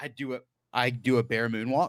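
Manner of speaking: ordinary talk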